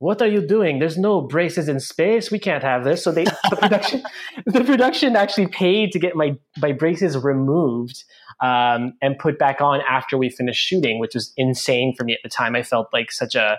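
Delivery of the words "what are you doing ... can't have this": high, put-on French accent. Retelling someone's reaction to the speaker's braces after the audition, put-on French accent. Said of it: "he had this like French accent".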